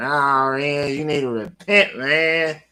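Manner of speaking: put-on high, slow Atlanta drawl, sounding half drunk. Retelling what a friend said about hell: imitating a friend's Atlanta accent. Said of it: "you have to know him and hear his voice".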